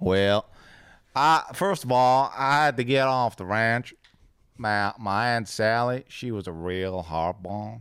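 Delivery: put-on Texas accent. Asked about learning golf in texas, answering in a texas accent. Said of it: "I think your Texas accent might be the most superior".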